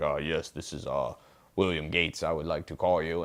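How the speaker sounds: dropped, soft grown-up voice. Retelling how a teenage Bill Gates made phone calls, Bill Gates lowering his voice. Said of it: "he would lower his voice".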